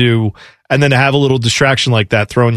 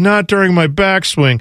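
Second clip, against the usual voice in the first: high, whiny, mocking little protesting tone; 5 semitones higher than usual. Retelling a golfer complaining after a photographer's shutter: imitating a whiny complaint. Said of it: "it was the whiniest".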